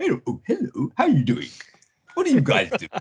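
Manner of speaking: put-on droid voice, pitch swinging. In costume, starting to talk with two people, in your droid voice. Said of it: "in the droid voice I have".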